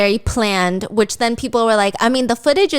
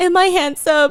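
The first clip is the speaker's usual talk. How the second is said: mock crying, higher pitched; 7 semitones higher than usual. Retelling how he asked her while crying: imitating someone crying. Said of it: "he's crying and he's like".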